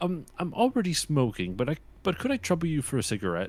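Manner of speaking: high, swooping, goofy, sing-song voice. Retelling a joke done in Matt Gourley's Ian Fleming voice: imitating Matt Gourley's Ian Fleming voice. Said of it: "one of my favorite jokes that he ever did in that voice".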